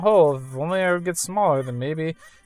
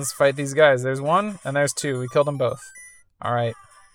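plain

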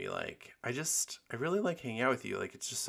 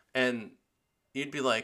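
ordinary delivery

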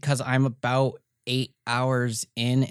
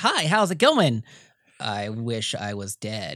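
put-on robotic computer voice; 3 semitones lower than usual. Describing how your computer talks to you, the speaker acts it out: GLaDOS-like computer voice. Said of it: "your computer talks to you kind of like GLaDOS".

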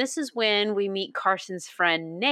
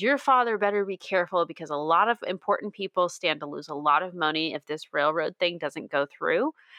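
plain

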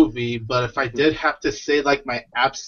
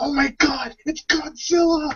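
very high, thrilled, drawn-out excited exclamation; 12 semitones higher than usual. Speaker retells how the audience reacted when Godzilla appeared, imitating excited audience. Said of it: "my audience was getting excited".

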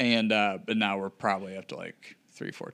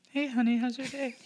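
very high-pitched put-on girl voice. Redoing a bit on request, greeting someone as honey in a girl voice. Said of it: "In your girl voice".

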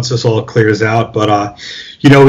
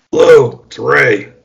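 creaky, gravelly, rough voice. Retelling a late-night phone call from Ray, imitating Ray's gravelly voice. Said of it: "I hear this gravelly voice".

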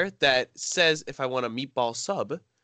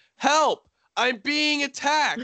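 mock very high, drawn-out yell; 13 semitones higher, 3 dB louder than usual. Retelling how a teacher opened the door: imitating someone shouting for help. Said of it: "Just shouts down the hallway".

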